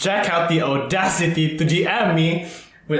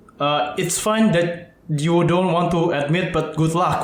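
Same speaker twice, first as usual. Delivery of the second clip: usual speaking voice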